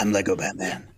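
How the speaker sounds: dropped low, heroic superhero voice. Offering to do another voice instead: Lego Batman voice. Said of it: "Can I do Lego Batman?".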